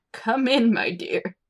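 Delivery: put-on elderly woman character voice. Reading a story aloud, voicing the old chief priestess: old priestess voice. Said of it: "She's old, like your grandma".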